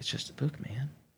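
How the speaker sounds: mock slippery, sly, soft delivery. Retelling how the other person answered when confronted about a witchcraft book: imitating a sly tone. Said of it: "just sly".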